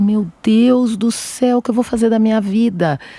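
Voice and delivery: put-on tearful voice. Retelling leaving the doctor after hearing of quadruplets: imitating own past crying. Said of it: "E aí eu saí chorando muito".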